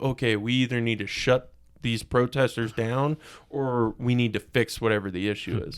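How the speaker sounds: ordinary delivery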